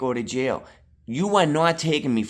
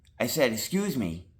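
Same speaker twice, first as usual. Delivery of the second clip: plain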